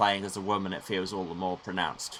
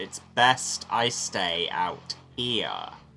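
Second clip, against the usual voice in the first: put-on pointed delivery. Repeating a character's line: imitating a pointed tone at the player. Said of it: "pointedly talking to the player tones".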